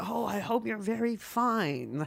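mock overly caring, slow, concerned, "fine" drawn out. Imitating a doctor's secretary answering the phone: imitating a concerned secretary. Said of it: "they're just so concerned".

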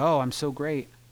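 normal talking voice

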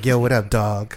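put-on urban street slang voice. Describing a comedian's bit called Urban Bobby: Urban Bobby voice. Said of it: "he does this like urban voice, like".

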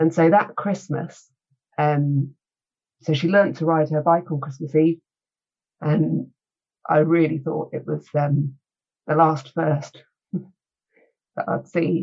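very slow, emotion-laden speech. Recalling her child learning to ride a bike on Christmas Eve, getting emotional. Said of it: "Excuse me for getting emotional".

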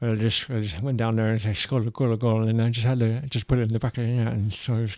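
muffled, mouth-full voice. Mocking how an English striker talks, in a muffled gauze-in-mouth voice. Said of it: "he sounds like he has a bunch of gauze stuck in his mouth".

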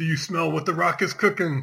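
high, loud screamed yell. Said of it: "you just screamed out".

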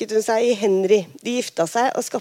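ordinary delivery

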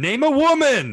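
very high, very loud, shrill screaming yell. Describing a tv episode where a man yells at a lady, retelling a yell. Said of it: "just yells at her".

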